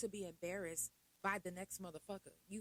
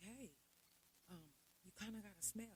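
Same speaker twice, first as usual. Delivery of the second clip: soft, discreet, hushed whisper, barely audible; 11 dB quieter than usual. Recounting tapping a woman's shoulder on the couch; retelling a whisper. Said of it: "I'm whispering".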